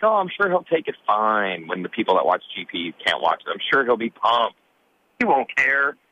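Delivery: sarcastic, swooping sing-song delivery. Retelling a past conversation, the speaker quotes their own reply, retelling it sarcastically.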